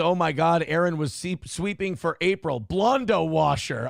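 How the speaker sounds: usual speaking voice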